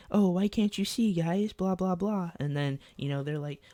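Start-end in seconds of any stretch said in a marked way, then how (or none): 0.1-2.3 small, little, high-pitched voice. Retelling a fight over seeing the TV, speaker quotes him in a little voice. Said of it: "he asked them in a little voice like".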